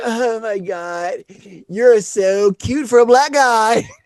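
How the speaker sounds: put-on very slow, loud, high tipsy drawl. Retelling what a drunk girl said in the car: imitating a drunk girl.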